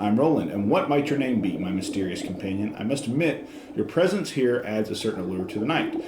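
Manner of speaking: plain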